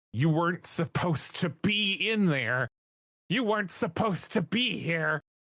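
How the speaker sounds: half-strength yelling with pitch climbing. Player's character sprints toward a figure, screaming. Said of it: "just screaming".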